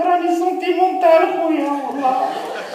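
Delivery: high-pitched crying voice.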